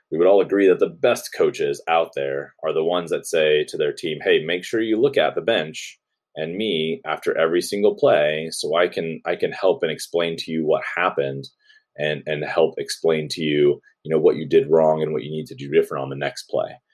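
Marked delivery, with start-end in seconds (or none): none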